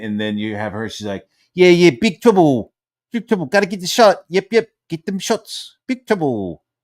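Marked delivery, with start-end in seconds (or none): 1.5-6.5 put-on high, loud, simple childlike little-kid voice. Retelling a woman translating in a video clip: imitating speech that sounded like a little kid. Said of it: "It sounded like a little kid".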